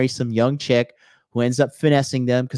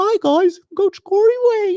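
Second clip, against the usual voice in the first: high-pitched, small, mocking voice; 4 dB louder than usual. Ranting about a coach, then mocking him: high-pitched Corey Wayne impression. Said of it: "His little high pitched voice".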